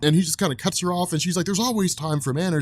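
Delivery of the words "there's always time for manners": ordinary talk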